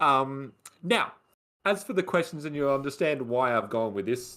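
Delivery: plain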